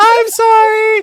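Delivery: put-on high girlish voice. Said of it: "It's hard to do little girls".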